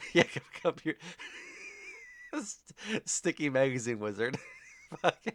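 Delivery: giddy, laughing while talking. Apologizing to folks late at night, giddy, laughing while talking. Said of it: "I'm getting giddy".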